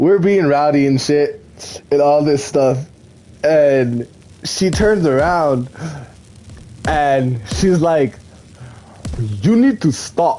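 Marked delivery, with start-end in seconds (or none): 9.2-10.4 speaking with a put-on Nigerian accent. Quoting a woman telling the rowdy group to stop, in a deep nigerian accent. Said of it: "she had that deep Nigerian voice".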